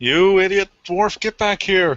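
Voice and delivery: high, loud shout in a character voice. Shouting back in character at a companion during a fight: in-character shout. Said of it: "is gonna shout back at Fulgrim".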